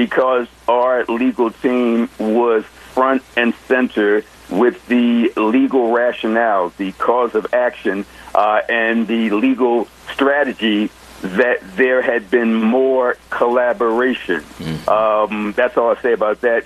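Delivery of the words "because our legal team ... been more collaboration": very slow, careful, deliberate, weighed delivery. Discussing their legal team and the Park administration, speaking very slowly. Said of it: "I'm speaking very slowly out of respect".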